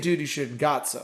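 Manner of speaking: usual speaking voice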